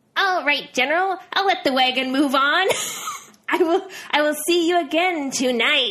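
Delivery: sharp, tinny, metallic voice, high and loud. Narrator reads a voice from the bushes answering the general: sharp metallic voice. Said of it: "a sound of a sharp metallic voice".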